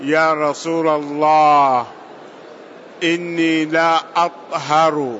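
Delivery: ordinary delivery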